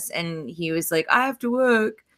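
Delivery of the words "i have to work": put-on Australian accent, pitched up. Retelling what Josh said when asked to come: imitating Josh in Australian accent. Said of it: "Is that your Australian accent?".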